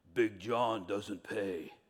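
very low, quiet bass voice dropped way down. Telling a joke about a huge man boarding a bus; Big John's really low voice. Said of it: "he has a really low voice".

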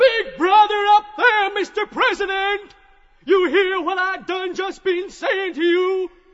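high shout at the top of the voice. Elijah calls up to Mr. President, shouting at top of voice. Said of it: "shouts at the top of his voice".

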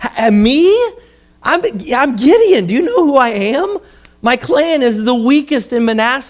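put-on high, whiny, complaining tone. Reading Gideon's answer to God aloud, in a whining Gideon voice. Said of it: "I picture a whining voice here".

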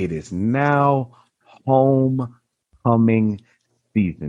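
slow, halting, deliberate delivery with "now" drawn out. Announcing homecoming season, letting it sizzle: slow, drawn out. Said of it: "I'm going to say it slowly".

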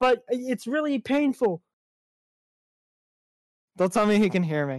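cartoon frog puppet character voice. Speaker complaining about a partner in a comic bit, in a Kermit voice. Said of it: "do a Kermit voice".

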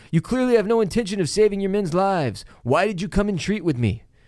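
high shouted call. Recapping a scene as the Blackfish walks off: retelling Jaime's yell. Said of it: "Jaime yells".

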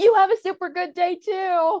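very high, loud, drawn-out yell. Retelling a friend yelling back at a swearing rollerblader: imitating Jim Davies yelling loudly. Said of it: "yells back at her".

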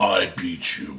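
booming low voice. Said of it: "big, deep voice that can beat you".

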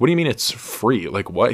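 plain

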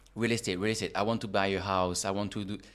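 ordinary delivery

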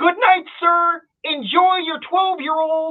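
very high, very loud, clear announcer-style call. Retelling what the cashier announced after the whiskey purchase, retelling a loud, clear call. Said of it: "in their loudest, clearest voice".

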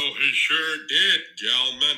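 soft, low-key, fake American cowboy drawl. Showing how someone does his American accent, in a John Wayne accent. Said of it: "He does this like John Wayne accent sometimes".

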